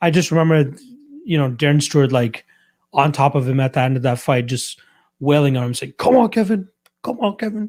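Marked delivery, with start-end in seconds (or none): 6.0-7.7 put-on street-style British accent.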